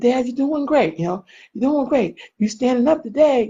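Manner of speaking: put-on cheerleader voice. Retelling cheering on a dad in the hospital: imitating own cheerleading. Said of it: "I'm doing a little cheerleader".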